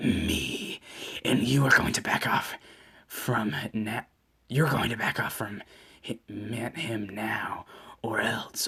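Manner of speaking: menacing, snake-like, dark, hushed, scary monster voice. Narrator reading a creature's threat to back off, in a dark, scary voice. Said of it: "the most dark and scary voice ever".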